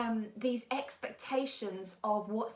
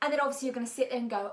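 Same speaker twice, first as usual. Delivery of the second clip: ordinary talk, nothing marked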